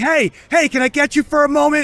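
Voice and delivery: high, loud put-on yelling. Pointing out a guy's voice nearby, imitating a guy yelling. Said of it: "it's yelling".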